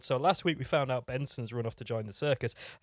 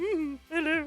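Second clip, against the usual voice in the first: very high, put-on lady's voice. Joking about disguising on radio, speaking in a put-on lady's voice. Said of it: "Being a lady".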